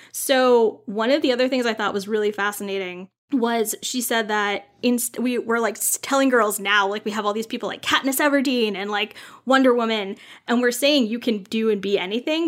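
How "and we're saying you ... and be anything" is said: "anything" stressed, even level pitch. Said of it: "but they're hearing".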